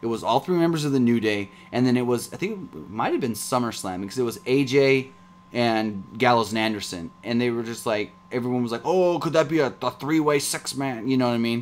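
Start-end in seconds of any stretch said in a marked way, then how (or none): 8.8-11.1 annoying, obnoxious wrestling-fan voice. Imitating fans guessing at a wrestling match: obnoxious fan voice. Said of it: "What impression was that?".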